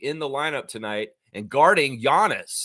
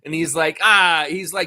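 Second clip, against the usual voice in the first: normal talking voice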